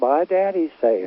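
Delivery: slow, nice, sweet, gentle little voice. A pastor showing how people expect a pastor to talk, in a nice sweet little voice. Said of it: "a nice, sweet little voice and talk, talk like this".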